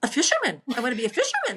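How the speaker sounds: put-on sweet, cute small-child voice, very high, sing-song. Retelling a grandson's answer about what he wants to be: imitating grandson Tristan, cute. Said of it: "the way he said it with those big blue eyes, it was really cute".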